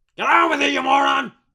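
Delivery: gruff newspaper editor voice. Doing an impression after another speaker asks: J. Jonah Jameson impression. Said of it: "J. Jonah Jameson in here?".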